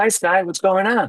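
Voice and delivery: put-on bright falsetto, very high. Retelling calling him from a payphone in the rain, in a fake high-pitched voice. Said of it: "with this fake pitch, high pitch voice".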